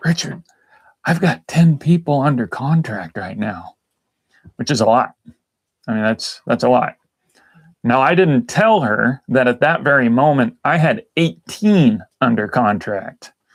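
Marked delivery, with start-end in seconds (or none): 0.0-3.8 quiet, hushed, softly spoken, kept down. Retelling a coworker friend's remark at a networking group: imitating a quiet voice. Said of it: "she said it in a quiet voice".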